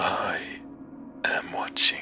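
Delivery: creepy whispered voice. Narrator whispers into the monitor in a dark house, creepiest whisper. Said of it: "I whispered into the monitor, using the creepiest voice I could muster".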